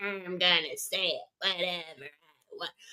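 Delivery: very quiet, low, smug and dismissive. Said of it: "she's so smug".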